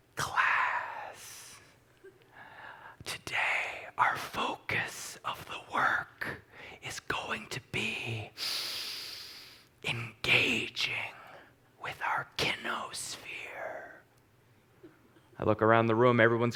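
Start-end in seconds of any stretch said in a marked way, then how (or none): 0.2-13.2 slow, soft, elegant near-whisper. Recalling a movement class, imitating the instructor addressing the class in a soft, elegant voice. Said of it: "she had a very soft, elegant voice".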